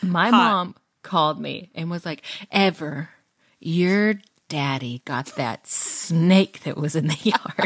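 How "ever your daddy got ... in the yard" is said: mock-aroused, horny-sounding put-on voice, slower. Speaker retelling a phone call from mom, imitating horny-sounding mom. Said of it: "I've never heard my mom so horny".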